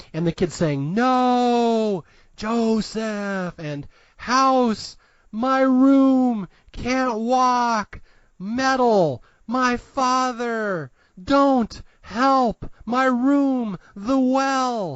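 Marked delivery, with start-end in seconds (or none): 0.9-15.0 mock tortured child's whisper, pitched higher. Retelling what the kid's voice on the recording says, imitating a tortured child whisper. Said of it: "It's like this tortured whisper".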